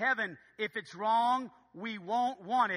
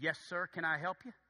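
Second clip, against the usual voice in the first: put-on stern guard voice, lower and quieter; 4 semitones lower, 6 dB quieter than usual. Retelling a guard at an exclusive golf club gate: imitating a stern guard. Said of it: "this guard comes up with this stern face".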